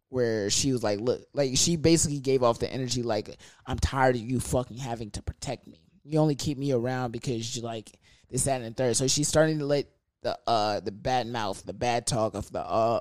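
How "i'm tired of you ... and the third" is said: plain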